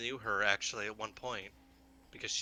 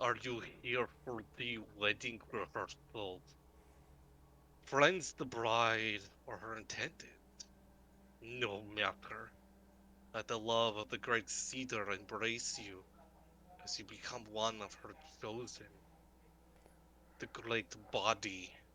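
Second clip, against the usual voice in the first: gurgling, spitting, wet monster voice; 4 dB quieter than usual. A fungal creature greets travelers arriving for a wedding rehearsal, in a gurgling, spitting creature voice. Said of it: "The aberrant myconid's voice gurgles, and s- it spits as it speaks".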